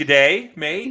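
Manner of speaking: fake Australian accent. Answering a co-host's joke back: put-on australian accent. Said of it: "enough of that".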